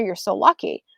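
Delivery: ordinary delivery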